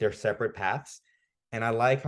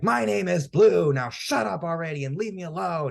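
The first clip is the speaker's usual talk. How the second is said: put-on, very high, furious, angry outburst; 10 semitones higher, 6 dB louder than usual. Retelling the rival finally giving his name: imitating the angry rival. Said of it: "He's just so angry".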